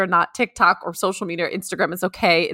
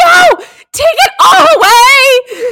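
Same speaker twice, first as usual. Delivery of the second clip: extreme, emphatic, loud, slow outburst; 13 dB louder than usual. Retelling own reaction to hearing a word: retelling an extreme outburst. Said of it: "I just had such an extreme reaction".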